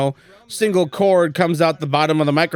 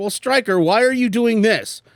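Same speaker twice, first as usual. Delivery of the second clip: put-on high kid voice, around twelve years old; 6 semitones higher than usual. Mimicking a twelve-year-old viewer questioning stryker, in a twelve-year-old kid voice. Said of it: "I do it in the voice of like a twelve year old".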